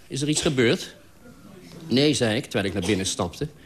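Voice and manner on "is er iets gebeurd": suspicious, wary, distrustful tone. A man opening his door questions the narrator, suspicious question. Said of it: "Hij nam me achterdochtig op en vroeg".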